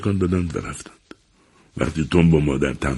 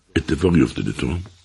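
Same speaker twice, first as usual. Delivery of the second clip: plain reading voice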